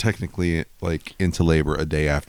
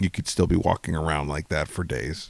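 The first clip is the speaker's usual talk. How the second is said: usual speaking voice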